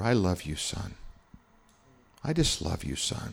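slow, soft whisper, close in the ear. Retelling loving words that were whispered in the ear: retelling a whisper. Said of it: "He kinda whispered in my ear".

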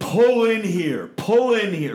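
loud, high screaming, repeated twice. Retelling screaming at a passing driver from a car window; retelling a scream. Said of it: "Like I'm screaming at".

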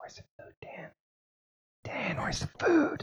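urgent, very hushed whisper. Speaker acts out his subconscious lizard brain speaking inside him, whispering. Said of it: "something deep inside me was whispering".

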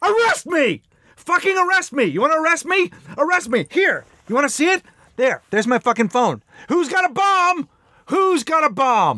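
put-on very high, furious, ranting scream. Describing days when it makes the speaker so mad, acting out angry screaming. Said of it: "ready to start screaming".

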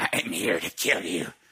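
very low, hushed, soft menacing man's voice. Retelling how a man grabbed the speaker and spoke in another voice: a different man's voice. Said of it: "A voice of a different man goes".

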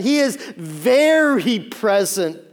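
heavy stress on very, slow and drawn out. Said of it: "not just present".

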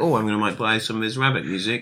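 ordinary talk, nothing marked

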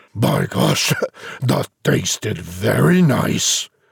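deep, rumbling, muttering giant voice. Reading a story aloud, voicing the giant in a deep, rumbling voice. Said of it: "He heard the giant mutter twice, ... he heard a big, deep voice, a rumbling thing that made the very heavens ring".

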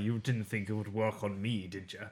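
put-on Scottish accent, actor-style delivery. Retelling a TV scene as the Doctor: Peter Capaldi impression. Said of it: "was that your Capaldi impression?".

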